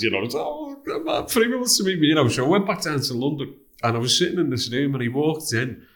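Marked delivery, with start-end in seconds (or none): 0.4-2.1 very high, starstruck gushing. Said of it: "my head was battered".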